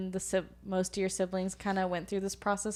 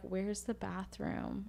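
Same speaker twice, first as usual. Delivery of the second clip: acted whisper, quieter; 7 dB quieter than usual. Retelling asking mom in her ear for the bathroom: imitating own whisper. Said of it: "I whispered in her, her ear".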